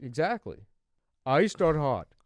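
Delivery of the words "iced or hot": very loud, high cashier call-out. Retelling how coffee shop workers ask a question: imitating Dunkin' Donuts workers. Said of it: "That's a good impression".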